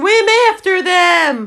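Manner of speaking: full-throated, high, shrill screamed cry. The Gryphon, joining the Mock Turtle's explanation, screaming. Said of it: "screamed the Gryphon".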